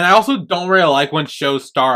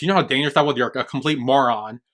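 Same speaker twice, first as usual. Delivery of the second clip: ordinary talk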